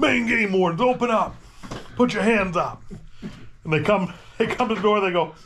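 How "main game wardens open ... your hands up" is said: mock commanding, official yelled shout. Retelling pounding on a camp door as a joke: retelling a yell. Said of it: "I pound it on the door and I yell".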